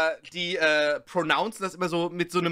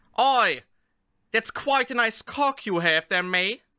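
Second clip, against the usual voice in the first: put-on, fake British English accent; 4 semitones higher than usual. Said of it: "six ways of sounding more authentically British".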